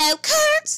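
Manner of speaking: shrill, very loud, high belted outburst. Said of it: "That's my [name]".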